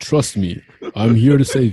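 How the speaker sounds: slow, loud robot leader voice. Retelling how a movie hero asked humans for trust: deep Optimus Prime voice. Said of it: "Optimus Prime came with his deep voice".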